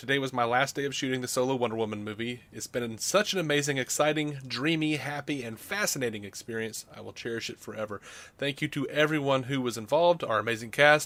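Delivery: ordinary delivery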